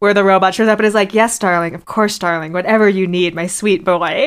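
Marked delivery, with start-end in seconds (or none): 1.1-4.3 beaten-down, meek, placating, submissive feminine voice. Retelling a scene where the robot shows up and speaks; imitating a meek feminine robot. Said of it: "a very feminine voice and is talking like a beaten woman".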